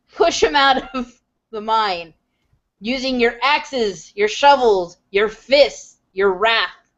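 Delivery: sonorous, resonant rousing delivery. Urging the captives trapped in the mine to rise up, resonant yell. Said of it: "I yell out in my resonant voice".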